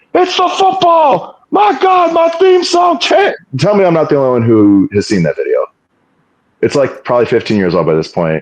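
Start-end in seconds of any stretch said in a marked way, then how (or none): 0.1-3.3 very high, stretched-out, drawn-out scream. Retelling Jim Ross's reaction in a meme video to Jericho's return, imitating him screaming. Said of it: "was screaming".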